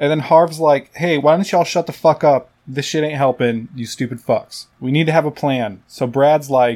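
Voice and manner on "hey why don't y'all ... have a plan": ordinary talk, nothing marked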